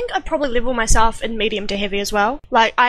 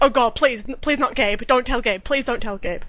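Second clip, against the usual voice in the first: mock frantic, panicked, pleading voice. Retelling a roleplay scene, quoting her character's reply, imitating panicked pleading. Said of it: "You're you're freaking out".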